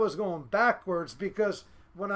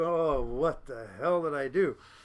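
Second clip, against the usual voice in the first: mock, slow, laughed-through exclamation; 6 semitones lower than usual. Retelling watching the wrecked car being towed: imitating own past laughing remark. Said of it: "I'm just laughing".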